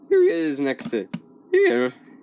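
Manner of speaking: voice cracking. Doing a size comparison between two robots: voice cracking. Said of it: "Sorry, voice crack".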